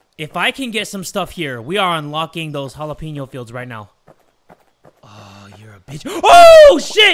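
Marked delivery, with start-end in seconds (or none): 6.1-7.2 voice breaking in a very high, loud shout. While playing a game and unlocking fields, voice cracking. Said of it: "my voice just cracked".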